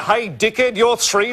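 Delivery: normal talking voice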